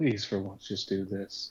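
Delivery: breathy, pleading whisper, leaned in close. Playing a character who whispers a plea to a bandmate: whispering in character. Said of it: "Bruce kinda whispers towards her".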